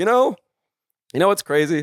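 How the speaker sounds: very sarcastic, petty tone, pitched high. Retelling what was said to a partner: imitating own sarcastic tone. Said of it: "This is when I got really sarcastic".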